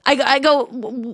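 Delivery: ordinary talk, nothing marked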